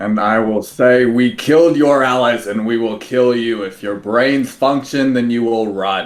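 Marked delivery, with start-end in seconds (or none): 1.0-6.1 very loud booming voice. Threatening enemies in character with a magically amplified voice: booming threefold-loud voice. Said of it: "cast Thaumaturgy to make my voice three times louder".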